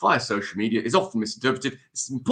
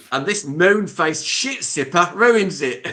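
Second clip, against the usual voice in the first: terrible, loud, put-on Australian accent; 7 semitones higher, 6 dB louder than usual. A line that has to be in an Australian accent: bad put-on Australian accent. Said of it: "This has to be in an Australian accent".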